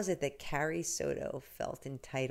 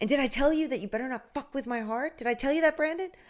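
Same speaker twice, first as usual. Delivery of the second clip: put-on scream, higher and louder; 10 semitones higher, 7 dB louder than usual. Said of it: "screaming at him".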